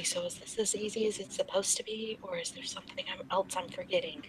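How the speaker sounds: very quiet, whispered aside. A narrator reads one character whispering a question to another, whispering. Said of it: "She kind of whispers to Darcy".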